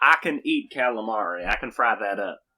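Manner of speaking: lazy, slow put-on Southern US drawl. Voicing the character again, recalling their earlier voice: Southern accent.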